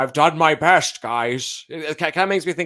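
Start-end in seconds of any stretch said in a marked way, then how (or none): 0.0-1.6 mock lovable old man voice, higher and louder. Describing a TV cop character type: imitating a lovable old grandpa cop. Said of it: "that type of, like".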